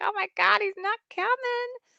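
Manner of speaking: very high mock dismay.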